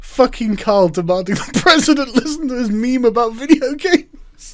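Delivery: straight face breaking into laughter while reading aloud. Reading a line aloud, unable to keep a straight face: laughing while reading aloud. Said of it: "I can't keep a straight face reading this".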